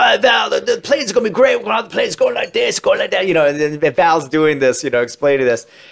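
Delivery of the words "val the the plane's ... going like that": put-on British accent, high-pitched. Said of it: "he starts doing, like, a Tony Scott British impression".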